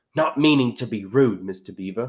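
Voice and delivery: plain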